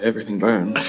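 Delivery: quiet muttering under the breath. Speaking in character after suggesting fire to a host, muttered under the breath. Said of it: "say under my breath".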